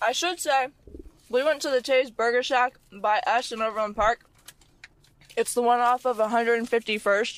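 talking with mouth full. A speaker eating during a food outing with others: talking with mouth full. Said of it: "My mouth is so full right now".

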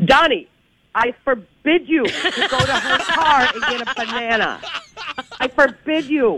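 mock call, drawn out, slow and deliberate. Retelling yelling from an office at a coworker: imitating own past yell. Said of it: "I yelled out my office".

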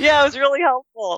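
put-on cheeky high teenage voice.

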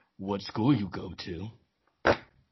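very deep, low, slow creepy voice. Speaker reenacts a recording of a man questioning a girl: reenacting a creepy man's voice. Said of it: "Why you sound like a creep".

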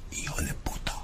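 whispering. Demonstrating how to say a Spanish curse from Narcos, whispering. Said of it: "You can whisper it".

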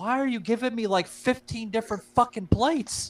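play-acted aggrieved, irritated, upset complaining tone. Retelling a complaint to a waitress over too many plates: imitating own upset question. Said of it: "I looked at the waitress and I'm upset".

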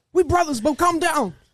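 screaming, pitched way up high. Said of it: "Start screaming".

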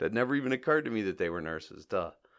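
ordinary talk

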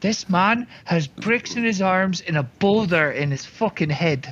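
whisper in character voice. Whispering in a companion's ear about an intimidating man: whispering in character. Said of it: "I whisper in Edgar's ear".

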